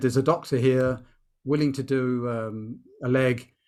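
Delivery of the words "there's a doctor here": ordinary delivery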